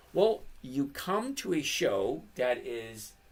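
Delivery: ordinary delivery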